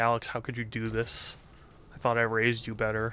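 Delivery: mock tearful crying voice. Imagining a mother calling after finding out: imitating mom crying. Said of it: "She'll call and she'll cry".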